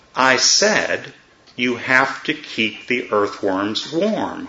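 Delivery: slow, deliberate, each word measured and weighed. In a told story, the second man repeats himself to the first, slow and deliberate. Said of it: "he said slowly and deliberately".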